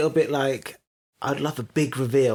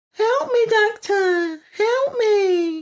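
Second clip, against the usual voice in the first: put-on tiny, very high, very slow little girl voice; 4 dB louder than usual. Retelling a scene where someone calls out to the Doctor, in a little girl's voice. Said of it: "The little girl's voice".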